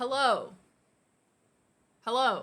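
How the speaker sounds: speaking at maximum volume, very loud voice. Testing the voice when asked to speak as loud as possible: speaking as loud as possible. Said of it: "speak as loud as you can?".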